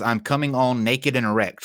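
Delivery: ordinary talk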